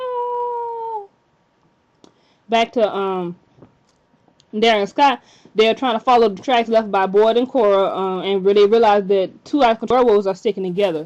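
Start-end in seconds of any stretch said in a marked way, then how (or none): 0.0-1.1 high-pitched mock scream. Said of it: "and she screams".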